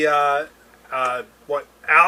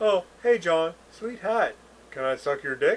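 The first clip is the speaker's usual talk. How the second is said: synthetic comedy robot character voice; 7 dB quieter than usual.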